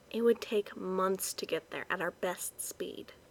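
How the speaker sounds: quiet, soft-spoken. Reading a story, someone remarks to a group looking at a map: said quietly. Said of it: "Shannon said quietly".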